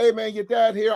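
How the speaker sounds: mock easygoing, neighbourly, kind, friendly tone. Acting out greeting the kids' father from the porch: imitating his own kind greeting. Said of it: "I'm the kindest guy".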